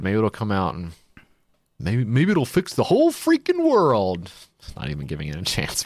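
thick, dismissive sarcasm with swooping pitch. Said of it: "Being really sarcastic".

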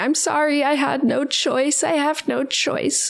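put-on tearful pleading. Retelling a film scene where a woman apologizes: mock crying. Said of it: "crying and saying".

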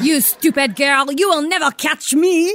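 put-on very high, very loud, shrill, phony French accent. A character slipping out the door calls back to a girl in a fake french accent. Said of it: "She's a phony French person".

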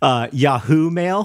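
put-on odd stress on 'yahoo'. Speaker explains avoiding an accent, imitating Sarah's odd stress on 'Yahoo'. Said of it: "Sarah would always say".

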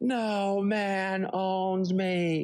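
crying words, very high-pitched and very slow. Retelling the mom standing up at dinner: imitating mom crying. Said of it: "starts crying and goes".

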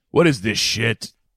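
put-on tough guy voice. Acting out James Caan walking in as Harry Potter: James Caan as Harry Potter. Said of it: "He walks in".

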